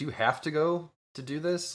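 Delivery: acted-out, high, agitated, very upset old woman voice. Speaker retells an old lady accosting Jonathan: imitating a very upset woman. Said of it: "like very upset".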